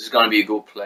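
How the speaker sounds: plain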